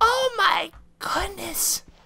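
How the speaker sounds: voice leaping into very high octaves. Spotting a friend's name while exploring together, exclaim in a high-pitched voice. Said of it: "my voice is going into such high octaves".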